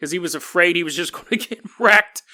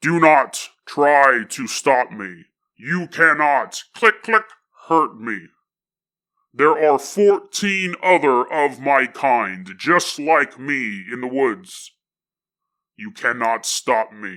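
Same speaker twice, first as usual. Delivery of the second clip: low, mechanical, machine-like robotic voice; 5 semitones lower than usual. Telling a story, voicing the robot's telepathic message to the farmer in a robot voice. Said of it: "And the robot goes".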